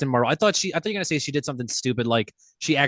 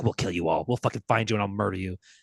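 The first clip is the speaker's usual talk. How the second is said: mock menacing superhero voice, lower pitch; 3 semitones lower than usual. Retelling a TV scene where Homelander threatens everyone: imitating Homelander threatening. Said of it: "And he's like".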